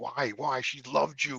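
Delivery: loud yelling. Retelling a night at their mother's grave, retelling a yell at god. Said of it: "And I'm yelling at God".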